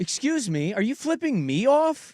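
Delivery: mock challenging tone. Retelling confronting a driver at a red light, imitating own past tone. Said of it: "This is the tone I'm using".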